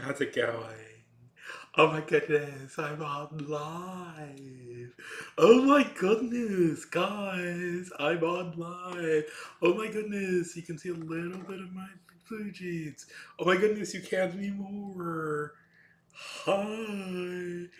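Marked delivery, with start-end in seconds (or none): 1.8-17.7 high-pitched put-on voice. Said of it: "I don't know why I'm doing this voice".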